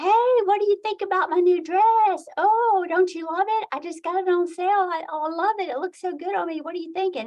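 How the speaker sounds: mock very high, bubbly, gushing, delighted chatter. Describing a best friend showing off her new dress, imitating a happy friend. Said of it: "she's like all happy and everything".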